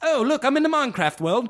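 mock very high, chirpy English gamer narration voice. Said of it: "and it's an English guy".

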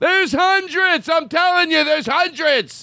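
shrill, very high-pitched yelling. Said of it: "yelling at you".

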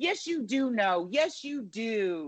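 put-on whiny teenage girl voice. Mimicking her talking to the president, do Savannah Guthrie as a teenage daughter talking to her father. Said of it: "sounded like a teenage daughter talking to her father".

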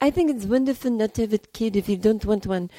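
put-on odd Russian-accented lilt. Retell the comment on The View about not having kids, as a Barbara Walters imitation, sounding Russian. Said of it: "she sounds Russian".

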